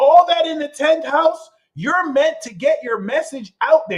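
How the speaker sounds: emphatic, lifted voice. Talking a viewer through their chart, raised voice. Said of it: "You see how I'm raising my voice?".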